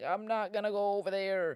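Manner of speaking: distraught woman's voice, high, loud and frantic.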